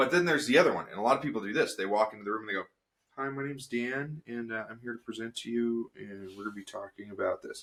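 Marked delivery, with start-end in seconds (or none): 3.2-7.6 quiet, timid, reserved, held-back presenter voice. Showing how many people introduce a presentation: quiet, reserved delivery. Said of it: "I was really quiet, and I was reserved".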